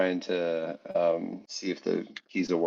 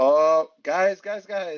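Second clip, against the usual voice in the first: very high, drawn-out calling out; 10 semitones higher, 4 dB louder than usual. Kelly realizes he has to get out and starts to call: calling around the corner. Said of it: "I'm more just like calling around the corner".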